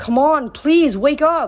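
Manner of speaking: frantic, stretched-out tone. Reading a novel aloud, Frank begs Hazel to wake up: panicked. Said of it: "sounding panicked".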